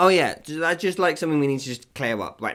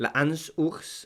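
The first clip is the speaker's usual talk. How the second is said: German-sounding French pronunciation, quieter; 4 dB quieter than usual. Attempting a French place name, the pronunciation comes out German-sounding. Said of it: "that was very German".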